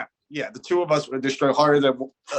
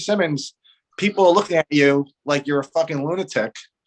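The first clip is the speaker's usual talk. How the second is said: plain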